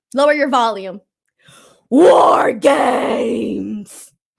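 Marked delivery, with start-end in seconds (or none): 1.8-4.1 clumsy, deliberately awful character voice. Doing a War Games impression a viewer asked for: War Games impression. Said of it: "my best War Games impression".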